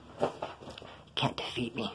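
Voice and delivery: very quiet, hushed, close whisper. Retelling what someone whispered in their ear during a scuffle: imitating a whisper. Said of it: "he has the nerve to whisper in my ear".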